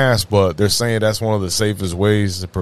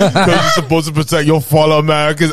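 put-on Austrian bodybuilder voice, higher and louder; 7 semitones higher, 4 dB louder than usual. Quoting a public figure on mask rules: Arnold Schwarzenegger impression. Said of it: "I've never done a Schwarzenegger impersonation".

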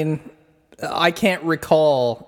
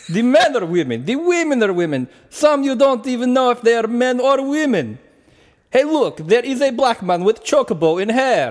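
put-on decent Russian accent. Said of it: "That was a solid accent".

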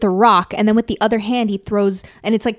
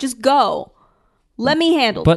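pleading, begging tone. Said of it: "he's begging him".

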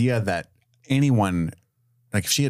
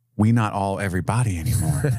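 put-on character whisper. Recapping a scene where Charlie stares at the ocean, imitating Charlie's whisper. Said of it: "he just whispered".

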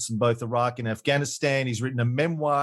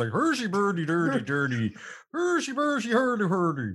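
swooping sing-song babble of nonsense syllables; 6 semitones higher than usual. Joking about how a person's name always sounds: Swedish Chef gibberish. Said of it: "it always sounds like a Swedish chef thing".

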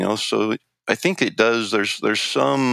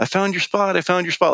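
mock happy, gleeful, game-like, pitched-up shouting; 8 semitones higher than usual. Retelling a coworker shouting from a passing truck: imitating someone yelling. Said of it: "he's yelling".

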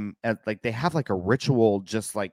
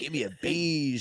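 mock slick cool-guy voice, higher and quieter; 4 semitones higher, 7 dB quieter than usual. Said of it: "it does sound super cool".

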